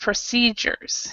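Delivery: procedures, with stress on second syllable ce. Explaining how to pronounce procedures, stress on ce in procedures. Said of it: "the C E is is pronounced C, and it's and it's stressed. Procedures, where the other two are not really stressed".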